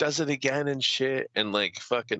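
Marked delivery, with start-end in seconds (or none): none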